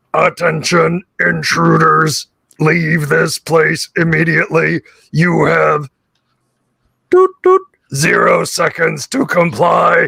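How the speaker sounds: flat, slow, grating, harsh metallic robot voice through grill. Voicing a security robot warning intruders: grating metallic robot voice. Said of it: "a very grating metallic voice through a grill".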